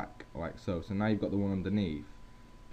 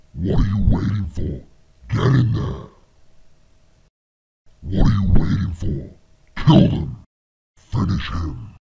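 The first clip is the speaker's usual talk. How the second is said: very loud, goading demonic devil voice; 15 dB louder than usual. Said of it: "sound like the devil / demonic".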